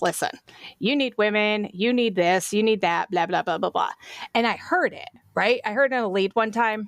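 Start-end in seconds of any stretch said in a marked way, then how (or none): none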